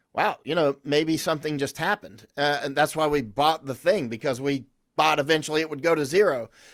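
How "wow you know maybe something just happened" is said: plain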